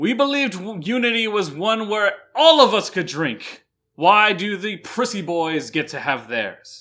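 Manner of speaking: furious, indignant outcry. A game narrator voices the dwarves from Duran in the mess hall, enraged. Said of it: "begin to become enraged".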